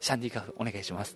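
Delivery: very hushed, barely audible, low small voice. Retelling quietly asking a staff member for a drink, in a small quiet voice. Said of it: "小声で".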